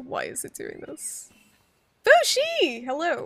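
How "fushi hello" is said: screamed at full tilt, high and loud. Greeting someone who just joined the voice call: screaming greeting. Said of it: "Sorry for, for screaming".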